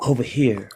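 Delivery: loud stage whisper. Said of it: "It's a loud whisper".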